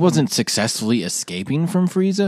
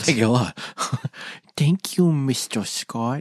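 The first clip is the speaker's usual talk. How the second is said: put-on toddler-style babyish baby talk; 5 dB quieter than usual. Thanking someone while discussing a show episode, in baby talk. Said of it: "You can't do baby talk".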